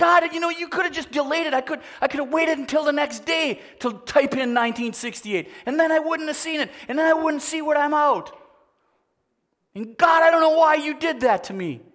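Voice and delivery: furious, raw, really angry outburst. Speaker addressing god directly, really angry. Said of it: "I'm really angry right now".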